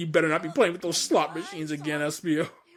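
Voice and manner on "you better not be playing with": plain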